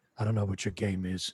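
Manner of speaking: said under breath. Voicing a golfer passing a rival at the tee: said under his breath. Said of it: "he will say under his breath".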